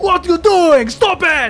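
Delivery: high-pitched, loud yelling.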